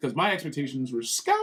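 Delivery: plain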